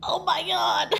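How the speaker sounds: emotional, very high, choked-up wavering voice. Speaking to followers in a personal video, fighting back tears over great news, choking up. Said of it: "I'm gonna cry".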